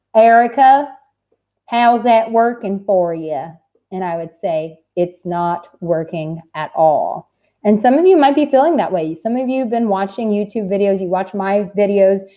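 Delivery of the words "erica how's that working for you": put-on heavy Texas accent, strong and slow drawl. Speaker quotes what a woman who encouraged her would ask, in a strong Texas accent. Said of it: "she had a very strong Texas accent".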